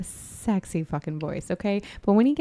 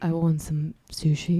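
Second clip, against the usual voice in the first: voice sunk way down, low, slow, sickly; 3 semitones lower than usual. Retelling what the sick husband answered: imitating husband's low sick voice. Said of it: "His voice has gone down two octave".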